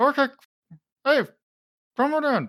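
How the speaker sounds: very high, muffled as if talking past a mouthful. Radia opens the door for the players, talking with a screwdriver in her mouth. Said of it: "holding a screwdriver in her mouth".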